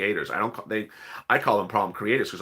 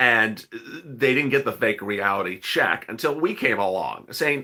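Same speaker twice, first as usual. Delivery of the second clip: ordinary delivery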